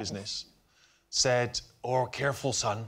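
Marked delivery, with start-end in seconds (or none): 1.8-2.8 put-on pirate-sounding voice, pitched lower. Retelling what a father said before buying glass: imitating father, pirate-sounding voice. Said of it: "Was he a pirate?".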